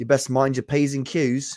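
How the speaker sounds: put-on British accent. Reading out names to the ladies and gentlemen, doing Wilberforce Wooster in a British accent. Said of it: "I imagine he's saying that in like a, a British accent".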